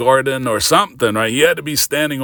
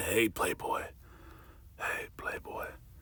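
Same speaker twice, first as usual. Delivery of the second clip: very soft, breathy whisper, close to the ear; 5 semitones lower, 19 dB quieter than usual. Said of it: "So [name] whispered in your ear and said".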